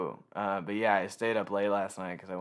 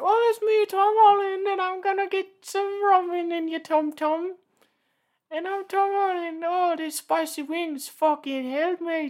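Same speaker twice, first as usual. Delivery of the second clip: very high, shrill, loud, slow, drawn-out voice; 9 dB louder than usual. Imagining visiting an actor's house: imitating Tom Holland. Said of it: "he's like".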